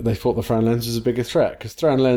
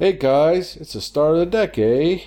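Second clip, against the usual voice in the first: put-on Canadian accent, pitched up; 6 semitones higher than usual. Repeating a deck-building phrase as a joke: put-on Canadian accent. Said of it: "There's my Canadian accent for you".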